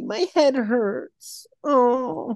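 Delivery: mock complaining weenie voice. Mocking the movie's emperor complaining about the Senate: mock complaining weenie voice. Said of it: "the scene where he shows up and he's like".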